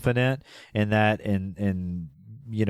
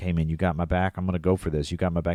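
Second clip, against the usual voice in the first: imitated whisper, lower pitch; 4 semitones lower than usual. Retelling an off-duty police officer urging a security guard: imitating someone whispering. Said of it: "He's kinda whispering to him".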